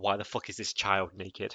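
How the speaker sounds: ordinary talk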